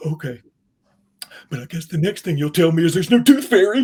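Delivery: loud put-on child voice, gasping breaths after crying. Retelling what a crying child said on the drive home: imitating a kid catching his breath after crying. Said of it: "he's catching his breath".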